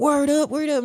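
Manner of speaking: very high, all-fired-up, enthusiastic voice. Retelling a man's reply after being offered weed, imitating his high enthusiastic voice. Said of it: "his voice is super high pitched and he's all enthusiastic".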